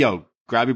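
ordinary talk

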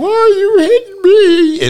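very shrill, very high, loud, stretched, drawn-out scream. Retelling being hit by a girlfriend from high school: retelling a scream. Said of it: "I screamed".

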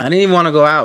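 shouting. Answering someone's teasing, yelling. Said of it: "You don't have to yell at me".

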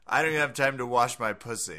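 plain

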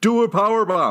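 very high yell, squeezed, words run together. Showing how a title with an exclamation point is said, yelled, words squeezed together. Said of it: "it's all squeezed together, you know, like you're yelling to somebody".

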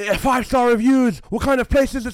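very loud, high-pitched shout. Retelling a man shouting in the speaker's shop, retelling his shouting. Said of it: "He's shouting".

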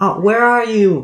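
shrill, very high, loud screaming from afar. Game master voices a lost character answering shouts for her, Samantha screaming. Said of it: "You can hear her screaming and she's like".

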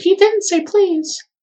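put-on tiny, very high, small childlike voice. The game master voices an unseen child objecting from nearby, in a child's voice. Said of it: "You hear a child's voice say".

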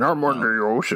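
put-on underwater cartoon villain voice. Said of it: "You sounded like Merman from He, He-Man".

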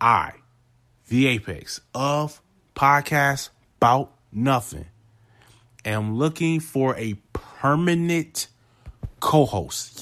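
serious voice with real urgency. Podcast host telling listeners he is looking for a permanent co-host, urgent voice. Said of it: "Listen to the urgency in my voice".

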